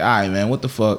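usual speaking voice

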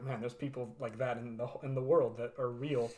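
ordinary talk

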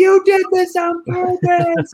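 very high, shrill, drawn-out accusing scream. Retelling a toy accident, imitating screaming at sister. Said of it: "screaming at my sister".

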